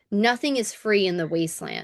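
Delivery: ordinary delivery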